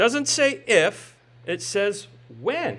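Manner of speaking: if and when stressed, drawn out slowly. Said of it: "Underline the word when".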